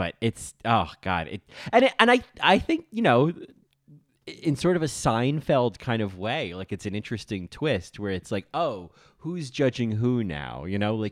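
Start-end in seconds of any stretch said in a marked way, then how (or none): 8.5-10.6 long, yawny drawl, drawn out mid-yawn. Imitating Abbi turning the judgment back: Abbi's long yawny voice. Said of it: "this very sort of long, kind of yawny way of talking".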